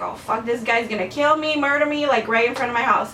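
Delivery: ordinary delivery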